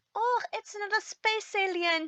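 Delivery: bad, failed, very high-pitched Scottish accent. Quoting Scooter's line from the episode in a bad Scottish accent. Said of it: "I can't do a Scottish accent".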